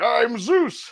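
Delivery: boisterous, very high-pitched, loud, booming big voice. Showing how the actor could have done the voice: boisterous Zeus voice. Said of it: "This boisterous".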